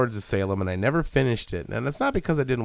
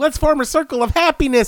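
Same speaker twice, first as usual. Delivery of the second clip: put-on high, loud, cheerful little-girl chirp. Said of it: "and they're like".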